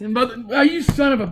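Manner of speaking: high, pained outcry. Interrupting the other speaker's outro, crying out in pain. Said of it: "Stop crying!".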